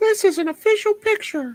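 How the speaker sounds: very high-pitched, loud put-on voice. Claiming nobody can tell whether it is the speaker or Mary, in a Mary voice. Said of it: "in Mary's voice".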